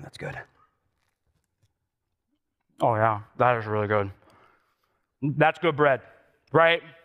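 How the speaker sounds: speaking with food in mouth. Tasting buttered bread in front of the audience, talking with mouth full. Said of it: "I don't want to talk my mouth full".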